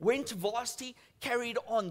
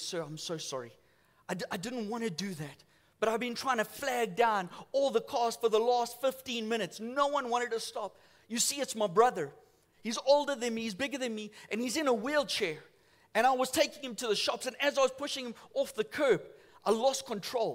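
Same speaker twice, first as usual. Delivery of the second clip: ordinary delivery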